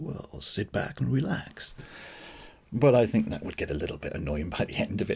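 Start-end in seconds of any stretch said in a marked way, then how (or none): 0.0-1.7 exaggeratedly relaxed, slow, easy-going put-on voice. Opening a relaxing music show, joking: put-on relaxed laid-back voice. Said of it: "I feel I should be talking like this".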